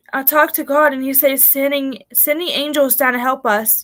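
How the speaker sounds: plain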